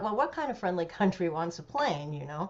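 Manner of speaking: plain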